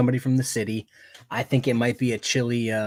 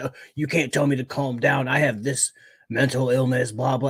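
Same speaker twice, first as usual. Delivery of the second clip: put-on agitated man's voice. Retelling a man's reply to a judge telling him to calm down, mock-agitated. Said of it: "like agitated and".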